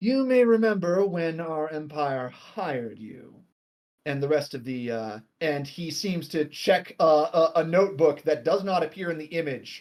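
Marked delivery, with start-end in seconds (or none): 0.0-3.3 formal, distant, detached, aloof tone. A figure appears and addresses the player, in a formal, distant voice. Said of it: "says in a rather formal, distant voice".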